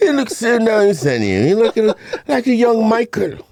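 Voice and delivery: loud, very high fake British accent. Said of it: "talk with a, a British accent".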